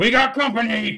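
very high, loud shouted yell. Voicing a fleeing hostage as combat begins: yelling. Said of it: "he yells".

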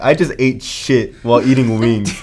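ordinary talk

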